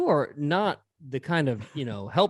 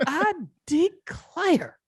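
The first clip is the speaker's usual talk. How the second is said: play-acted, very high, startled, gasping exclamation. Imitating a grandmother who gasps when startled: imitating grandmother's startled gasp.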